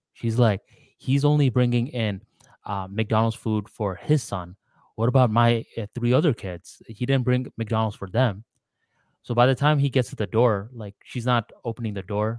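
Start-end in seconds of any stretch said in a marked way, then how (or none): none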